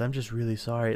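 put-on sober, subdued, somber and sorry-sounding tone. Retelling a man's apology after his play-by-play, in a mock-somber voice. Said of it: "back to my somber voice".

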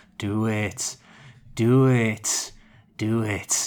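very slow, low, drawn-out, threatening tone. Describing a film scene, quoting Mighty Eagle's low menacing voice. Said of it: "in this sort of low menace".

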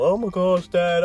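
mock-emotional. Retelling a movie scene where a character speaks to his dad: acting out being emotional. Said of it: "He's all emotional".

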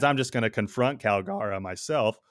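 cracking, breaking voice. Retelling a character's decision in a story, your voice cracking. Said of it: "Did you hear that voice crack?".

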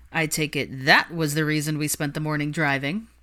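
plain

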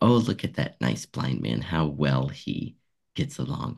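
plain

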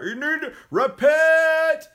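high, loud street-preacher-style yell.

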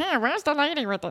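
put-on cockroach bug character voice. Imagining how the cockroach talks, in a cockroach voice. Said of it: "That's probably what he sounds like".

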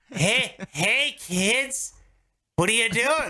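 high put-on spokesman voice, called out. Imitating a spokesman coming around the corner at kids: imitating Jared from Subway. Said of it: "Hold on, I should".

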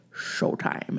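whispered, breathy put-on celebrity voice. Giving the cue that someone farts on, in a Sean Connery voice. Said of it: "in my Sean Connery voice".

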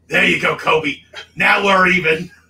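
threatening tone.

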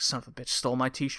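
mock muttering under breath. Retelling what he says once everything's done: imitating muttering under breath. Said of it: "under his breath".

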